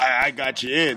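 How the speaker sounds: put-on proud tone. Retelling what his friend said after getting him in, acting out a proud reply. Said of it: "he's all proud".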